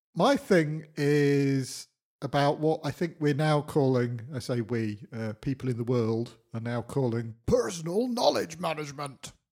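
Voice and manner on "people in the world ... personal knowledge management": mock-heroic, grand heroic tone. Speaker introducing their topic when invited to share, in a heroic voice. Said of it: "I attempted to say in a heroic voice".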